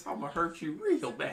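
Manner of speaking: high, loud, sweetly menacing tough-guy voice. Joining an impression of a wrestler who sounds too nice: Bobby Lashley impression. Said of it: "why do you sound so nice".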